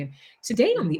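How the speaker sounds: calm, gentle, soothing storybook narrator voice. Showing how they voiced the show's narrator, in a soothing narrator voice. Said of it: "the narrator's voice is supposed to be very soothing".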